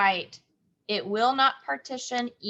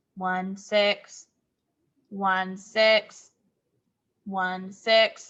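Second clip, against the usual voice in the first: robotic voice, slower pace. Teacher leads the class counting unit fractions in robot voice. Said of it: "Remember our robot voice".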